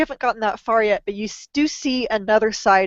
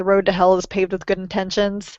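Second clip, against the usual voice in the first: ordinary talk, nothing marked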